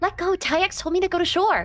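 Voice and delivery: squeaking voice. Voicing a grappled character who is being held: squeaky voice. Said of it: "her voice just squeak out and go".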